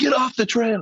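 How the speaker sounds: very high, loud shouted yell. Retelling warning hikers as a bear came at them: imitating own past yell. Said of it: "I yelled to everybody".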